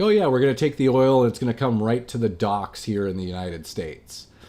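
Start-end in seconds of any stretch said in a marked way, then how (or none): none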